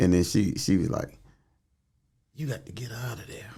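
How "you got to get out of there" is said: very quiet, hushed whisper. Retelling a talk with their mother about the church: whispering. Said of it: "You're whispering".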